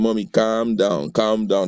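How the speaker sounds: usual speaking voice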